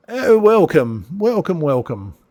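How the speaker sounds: put-on high-pitched, elderly elven old man voice. Voicing an elderly elven man greeting arriving guests: old elven man voice. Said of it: "an elderly elven man ... And he says".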